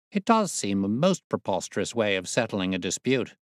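ordinary delivery

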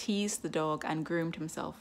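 ordinary delivery

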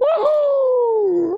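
very high, drawn-out cartoon "woohoo" whoop. Opening a video about a Mario anniversary showcase: Mario impression. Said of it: "That's me doing an impression of Mario".

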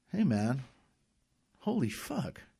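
high, swooping, drawn-out exclamation. Vince reacts to the pill bottle Uncle Robert has been taking; exclaiming. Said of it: "exclaimed Vince".

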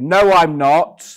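blurted, very loud. Retelling a reply to a teacher in front of the class: imitating own very loud reply. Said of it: "my response was to very loudly say".

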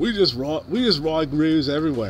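put-on plain, raw, unpolished, drawn-out Australian accent. Showing how he would say something, imitate him in a straight Aussie accent. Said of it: "just straight Aussie accent".

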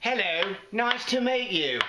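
high, sing-song English-accented sidekick voice.

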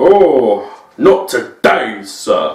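mighty voice with the oh drawn out. Explaining how Star Lord mocks the way Asgardians speak, mighty Thor voice. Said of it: "They sound all like right. mighty".

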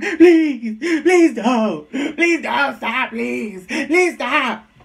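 acted, slow, tearful, crying, begging voice. Retelling how a man begged while attacked: imitating someone crying and pleading. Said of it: "you're crying and bitching about it".

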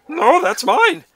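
put-on shrill, very loud, high old-man voice. Retelling a scene where Yoda beats a droid with a stick: Yoda as an old man. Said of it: "just like an old man".

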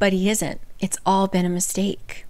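plain

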